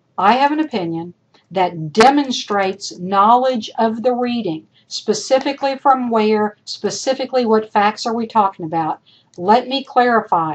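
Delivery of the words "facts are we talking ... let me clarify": ordinary talk, nothing marked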